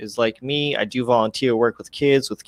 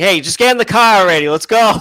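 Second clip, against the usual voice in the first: Boston accent, higher and louder; 8 semitones higher, 7 dB louder than usual. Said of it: "have my accent come out".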